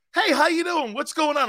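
put-on easygoing, high-pitched, friendly southern accent. Speaker recounts being greeted down south, imitating people down south. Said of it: "people down south go like this".

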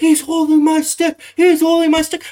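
very high, shrill, acted yelling. Acting out what a hockey player was lip-read saying as the refs came over, retelling a yell. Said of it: "He's yelling".

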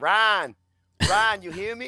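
loud, insistent, repeated calling. Retelling an interview where the guest kept calling out: imitating O G Buck. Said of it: "he kept going like this".

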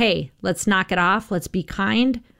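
normal talking voice

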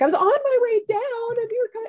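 put-on upset, high-pitched child.

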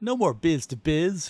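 put-on Southern accent.

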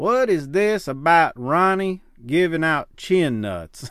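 put-on Tennessee accent. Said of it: "I can't do a Bo James voice".

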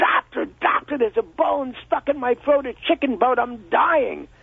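mild high-pitched cry. Telling a joke, acting out a patient at the doctor's: imitating a patient screaming. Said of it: "is screaming".

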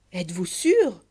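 feigned surprise. A man questions another, feigned surprise. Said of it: "feignant l'étonnement".

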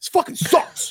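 play-acted, mild, half-yelled griping tone. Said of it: "I'm yelling this at my T V".

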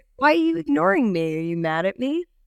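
mock playful flirty teasing, high sing-song. Retelling how the chef greeted her at work: imitating a flirty chef. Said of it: "Like, flirty".

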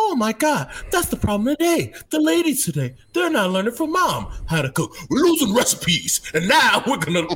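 very high, innocent-sounding put-on voice. Starting off an impression of someone, put-on high voice. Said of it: "you got to start off with the high voice".

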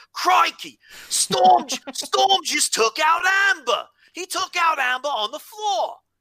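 put-on Australian commentator voice, very high and loud. Voicing the commentator over a described spot, imitated australian accent. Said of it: "How's that for an Australian accent?".

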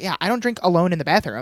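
ordinary talk, nothing marked

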